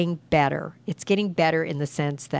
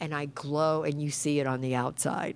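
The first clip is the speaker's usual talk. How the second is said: ordinary talk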